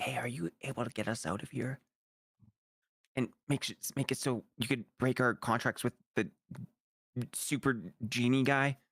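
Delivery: speaking softly in a whisper. Asking a creature in the game for help getting out: whispering. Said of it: "I kinda, like, whisper".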